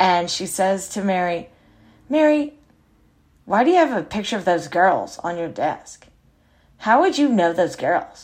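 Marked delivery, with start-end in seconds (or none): 2.1-8.2 put-on disdainful, sneering, contemptuous and scornful tone. Retelling what a visitor asked about a photo on the desk: imitating a contemptuous tone. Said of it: "she said it with such contempt".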